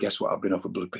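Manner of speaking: put-on whisper. Retelling sharing news with a colleague at the BBC: retelling a whisper. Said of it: "So I just whispered to her".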